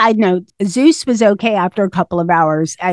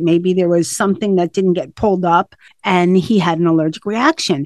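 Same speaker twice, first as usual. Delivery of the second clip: normal talking voice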